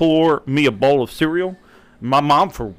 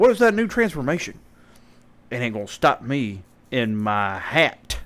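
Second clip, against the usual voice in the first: put-on very strong country accent; 3 semitones lower, 4 dB quieter than usual. Retelling the abridged version's Android 13 showing off his ball cap: super country Android 13 voice. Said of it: "the abridged just makes him sound like super country".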